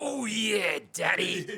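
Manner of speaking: shrill, booming, high, full-tilt wrestler yell. Retell what a child in diapers said in a silent room before your lift: Macho Man voice. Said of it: "he had it in the Macho Man tone".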